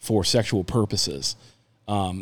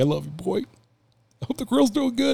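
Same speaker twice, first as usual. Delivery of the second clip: mock choked-up weeping, very high tearful blubber; 12 semitones higher than usual. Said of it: "My dad cries at drop out now".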